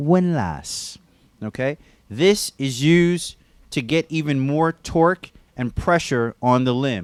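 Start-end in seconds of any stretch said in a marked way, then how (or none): 0.0-1.0 windlass pronounced with an English accent. Explaining how to tighten a belt on a limb, saying the word in an English accent. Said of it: "I like to use an English accent when I say it".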